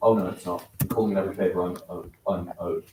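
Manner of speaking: ordinary delivery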